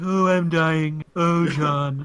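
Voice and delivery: slowed cartoon cat voice. Joking that bad Trump impressions sound like a cartoon cat: Frank Welker Garfield voice. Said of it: "It just sound like Frank Welker going".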